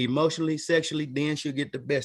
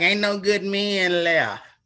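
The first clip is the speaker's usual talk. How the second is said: slow, stretched-out complaining tone; 4 semitones higher, 4 dB louder than usual. Retelling what some women say about men: imitating women complaining. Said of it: "They gotta say it like that though".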